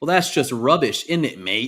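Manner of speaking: mock British accent. Reading out a UK complaint about how Gloucestershire was pronounced, in a mock British accent. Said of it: "this is what they say in the UK".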